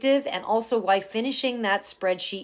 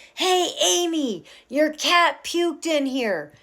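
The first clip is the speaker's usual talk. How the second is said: put-on, high-pitched, drawn-out calling yell; 8 semitones higher, 3 dB louder than usual. Retelling a partner yelling from the house: imitating a partner yelling. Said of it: "he yells at me from the house".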